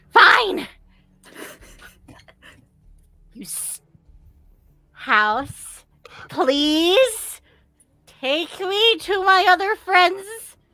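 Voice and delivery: very angry stomping huff, high and rising. Game master voices Sparkle stomping around the rug, angry Sparkle voice. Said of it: "he's very angry".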